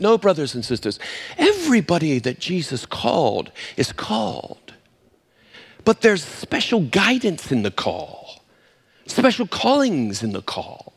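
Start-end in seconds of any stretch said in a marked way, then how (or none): 0.0-4.7 quieter, put-on British accent. Retelling what Sister Bruce told us, in Sister Bruce's British accent. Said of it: "in her British accent".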